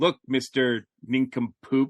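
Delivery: ordinary talk, nothing marked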